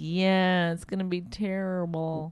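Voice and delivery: very slow, drawn-out, put-on sorrowful tone. Retelling her reply to other moms, imitating her own fake sadness. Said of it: "I have to pretend like I'm so sad".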